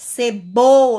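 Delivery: middle syllable bo of cebola stressed strongest. Showing which syllable is pronounced with more force, stress on bo. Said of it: "foi a sílaba bo".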